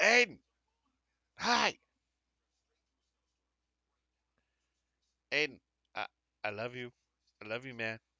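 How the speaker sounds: loud mock drunken yelling. Voicing Dan's drunken voicemail so Aiden can hear: drunken yelling. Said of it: "just yelling loud enough in your comm link".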